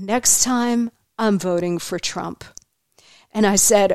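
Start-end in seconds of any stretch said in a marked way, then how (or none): 0.0-2.4 soft, hushed, secretive voiced stage whisper. Retelling what a woman leaned in and told the speaker: retelling a half-whisper. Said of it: "leaned in and whispered to me".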